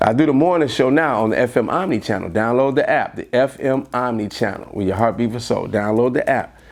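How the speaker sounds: usual speaking voice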